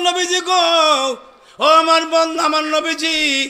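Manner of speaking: high, loud, slow, grieving wailing cry. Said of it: "ধরে একটা চিৎকার মারলেন".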